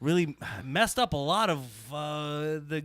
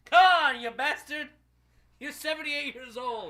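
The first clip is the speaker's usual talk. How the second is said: very high-pitched, shrill, raised-voice yelling; 10 semitones higher, 4 dB louder than usual. Daring someone to show up and calling him a bastard: yelling. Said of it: "Hashtag yelling".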